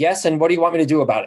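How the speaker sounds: mock defensive retort. Retelling how the wife answered a call about lost keys: imitating a defensive reply. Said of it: "she has to defend herself".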